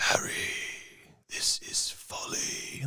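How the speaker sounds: very slow, drawn-out, hushed whisper, barely voiced. Answering a request to impersonate the whispering villain: whispering Voldemort impression. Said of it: "impersonate the whispering Voldemort".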